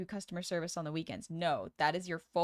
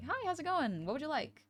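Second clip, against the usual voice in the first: upbeat, high, bright, high-energy customer service voice; 9 semitones higher, 4 dB quieter than usual. Example of a customer service voice for a short interaction, high-energy. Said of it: "an example of a customer service voice would be like".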